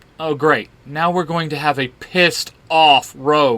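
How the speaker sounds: ordinary delivery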